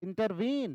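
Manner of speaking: final syllable veen of intervene stressed. Explaining anapestic meter with the word intervene: stress on last syllable veen. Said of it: "इन और टर दोनों पे हम कम जोर दे रहे हैं और वीन पे हम ज्यादा जोर दे रहे हैं".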